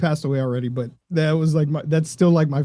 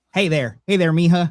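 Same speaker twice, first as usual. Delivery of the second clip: put-on old man voice, high rural twang; 3 semitones higher, 3 dB louder than usual. Imitating your grandfather's greeting: Grandpa Robert's redneck accent. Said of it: "he had a redneck accent".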